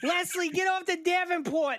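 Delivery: very high voice, a different speech pattern. Recalling with another speaker how someone used to talk; imitating someone's way of talking. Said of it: "how you used to say that Leslie used to talk".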